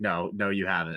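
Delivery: play-acted slow, flat, dry, expressionless deadpan. Retelling a joke where he flatly rejects her claim, in a put-on deadpan. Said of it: "It's very deadpan".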